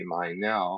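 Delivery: ordinary talk, nothing marked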